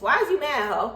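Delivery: high-pitched put-on voice with a jabbing tone. Ask why someone is mad while talking about lip fillers, in your Jocelyn voice. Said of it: "In my uh in my uh Jocelyn voice".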